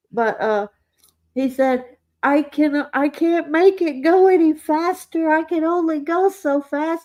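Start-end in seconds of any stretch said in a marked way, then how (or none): 2.3-7.1 high, froggy puppet-style voice. Retelling a fellow player's words while fleeing a dungeon monster, Kermit the Frog voice. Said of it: "he sounded just like Kermit the Frog".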